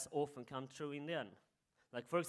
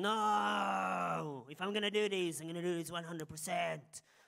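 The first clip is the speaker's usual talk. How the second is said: mock angry, slow, with a drawn-out no; 4 semitones higher, 5 dB louder than usual. Retelling how the orchestra director got angry: imitating an angry director. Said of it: "So he got angry".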